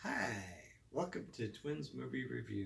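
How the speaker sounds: voice cracking and breaking up, creaky. Opening the show Twins Movie Review with the other host, voice cracking. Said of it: "and my voice is cracking".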